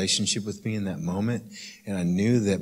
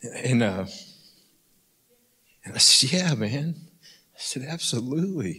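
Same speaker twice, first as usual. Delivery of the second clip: choking up, higher pitch; 4 semitones higher than usual. Retelling words said to a gentleman after a service, getting emotional. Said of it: "probably get emotional again".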